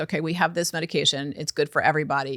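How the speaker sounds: usual speaking voice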